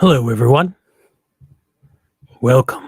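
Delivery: loud, throaty, put-on announcer-style voice. Opening by welcoming everyone, in a throaty voice. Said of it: "or it was me doing a throaty voice".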